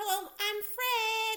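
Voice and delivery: put-on very high, loud, squeaky little kid voice. Complaining about a kid character he grew tired of: squeaky Fred voice.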